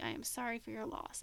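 sudden, very quiet, low-key hushed delivery. Recapping a show scene where Bobby faces another character, imitating Bobby, very quietly. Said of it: "he goes very quietly".

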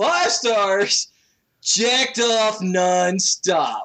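dude bro jock voice. Reading a five-star review aloud for laughs, in a dude bro voice. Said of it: "gonna be a dude bro voice".

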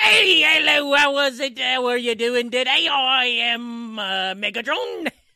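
put-on opening in Irish accent. Mocking how another speaker's attempt at a voice started: Irish-accented Megatron voice. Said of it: "why did it start Irish or something?".

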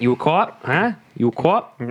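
put-on Boston accent. Acting out the rat bit for the group, in a Boston accent. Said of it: "Paul does a pretty good Boston accent".

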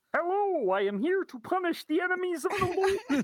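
very high, slow, drawn-out puppet voice. Voicing a biblical frog after asking to do the voice: Kermit voice. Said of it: "it sounds a little something like this".

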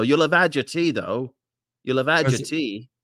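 bad fake English accent slipping into Australian. Pitching a character on a comedy show, English accent slipping into Australian. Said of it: "I slipped into an Australian".

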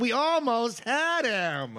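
mock very slow, high, swooping, drawn-out whine. Retelling a movie scene in a boardroom: imitating Parker Posey whining. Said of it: "she's, like, whining".

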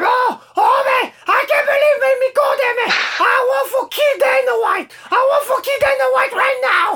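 tiny, very high voice, drawn out and slow. Speaker quoting Lara's outburst about the photo, in Lara's little voice. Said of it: "il y a là avec sa petite voix".

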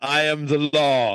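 very slow, deliberate delivery, word by word. Imagining how Judge Dredd would react on seeing someone: Judge Dredd voice. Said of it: "he would see you and just immediately be like".

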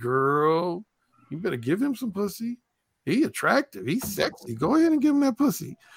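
put-on naughty, tempting, hushed sing-song voice, "girl" drawn out. Acting out the little devil on a woman's left shoulder: naughty devil voice. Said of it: "the naughty voice says".

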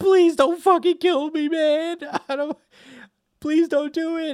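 very high, loud sobbing, crying voice. Retelling a scene with Buggy held by Crocodile: imitating Buggy crying. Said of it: "we open with Buggy just crying".

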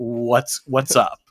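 lost, bewildered, baffled tone. Retelling how the movie's dad reacts to chaos: imitating a confused dad. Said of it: "the house is in chaos and he's like".

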